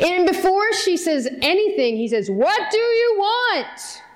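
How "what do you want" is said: big, booming, scary voice, very slow. Retelling a movie scene where the wizard greets a visitor, big loud scary Wizard of Oz voice. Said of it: "In this big, loud, scary".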